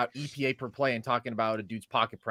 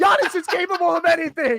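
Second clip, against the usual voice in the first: mock full-volume yell, higher and louder; 8 dB louder than usual. Imitating a friend's podcast rant about a team: imitating someone yelling at full volume. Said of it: "he's yelling at you at full volume".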